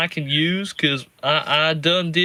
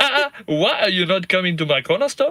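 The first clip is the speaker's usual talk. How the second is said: put-on cartoon corner-shop owner accent; 3 semitones higher than usual. Joining a Simpsons bit, speaking as the shopkeeper, in an Apu voice. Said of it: "because you got written out of the show, Apu".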